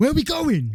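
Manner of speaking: sudden loud, high shout. Telling a story about a mate suddenly asking where they were going: retelling a loud shout. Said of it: "he said really loudly".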